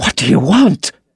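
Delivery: breathless, winded, gasped-out delivery. Narrator reads a man's words as a revolver is pointed at his head, gasping. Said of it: "he gasped".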